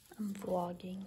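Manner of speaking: hushed, barely audible, very quiet half-whisper. Half-whispering to the camera so others nearby don't hear: half-whispering. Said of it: "I like when she just whispers".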